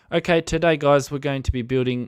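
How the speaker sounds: put-on South African accent. Retelling a man trying to do an accent for his building video, sounding south african. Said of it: "that sounds South African".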